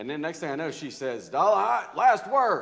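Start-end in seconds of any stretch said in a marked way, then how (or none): 1.3-2.6 very loud, high-pitched, booming voice. Speaker retelling a back-and-forth with their aunt, imitating Aunt Diane's booming voice. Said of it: "she has this booming voice".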